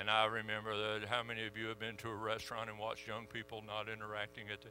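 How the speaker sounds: sleepy drone, very low, quiet and hushed. A speaker shows the audience how reading notes would put them to sleep, in a boring monotone reading. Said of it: "if I read in a monotone voice and just said".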